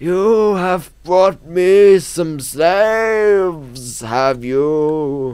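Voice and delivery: very slow, loud ancient voice, dragged out word by word. A storyteller voices a character addressing the party, in a very slow character voice. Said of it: "I should really make him speak faster".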